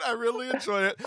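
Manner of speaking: mock sweet, very high, sing-song, gushing.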